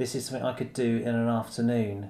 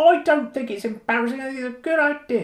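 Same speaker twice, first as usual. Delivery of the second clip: put-on voice, very high, loud and squeaky; 14 semitones higher, 8 dB louder than usual. The speaker pretends to be the producer replying to the host, squeaky producer voice. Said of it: "doing a squeaking voice pretending to be a producer".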